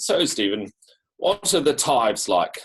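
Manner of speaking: strongly laid-on put-on English accent. Quoting an older leader's question to you, in a very english accent. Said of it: "in a very English accent".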